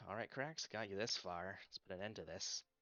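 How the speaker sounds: very quiet, muttered under the breath. Voicing a character tightening crossbow straps before a do-or-die fight: said under his breath. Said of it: "says under his breath".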